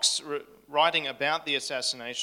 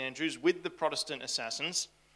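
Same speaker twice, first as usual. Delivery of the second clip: normal talking voice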